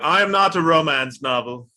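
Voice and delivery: forties movie-style mid-Atlantic accent. Echoing a co-host's line back to her, imitating 1940s transatlantic speech. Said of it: "nineteen forties transatlantic kind of speech".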